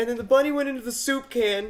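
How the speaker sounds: high whiny voice.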